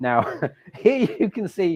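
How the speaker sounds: high, slow speech through laughter. Showing viewers a new tool in the app, laughing while talking. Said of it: "sorry, I'm laughing".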